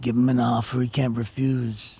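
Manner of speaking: low, deep gangster mob boss voice. Suggesting an impression the other speaker could do, then doing The Godfather impression. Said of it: "the Godfather".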